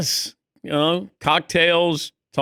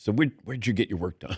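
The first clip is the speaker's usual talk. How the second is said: soft, hushed, secretive half-whisper; 6 semitones lower, 7 dB quieter than usual. Retelling how a hairdresser quietly asked a question: imitating someone half-whispering. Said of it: "she whispered to me".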